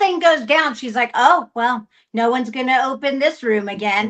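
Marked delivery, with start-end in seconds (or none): 1.1-4.1 mock flat, dry, expressionless deadpan delivery. Retelling how an actor in the movie said a line: imitating deadpan delivery.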